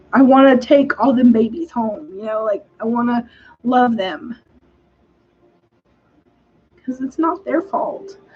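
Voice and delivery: choked-up voice catching, close to crying. Speaker talking about a woman's kids born addicted, near tears. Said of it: "I'm I'm about to cry".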